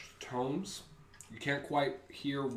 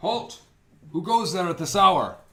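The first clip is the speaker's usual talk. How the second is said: very loud, raised, guard-like calling voice; 6 semitones higher, 14 dB louder than usual. Voicing a guard calling down from the walls: guard calling out. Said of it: "you hear a call from atop the, uh, walls".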